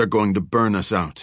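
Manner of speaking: usual speaking voice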